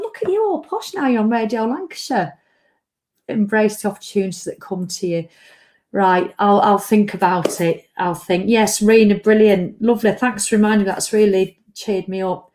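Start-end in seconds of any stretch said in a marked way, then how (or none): 0.0-2.3 high, teasing mock voice. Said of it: "I'll be going".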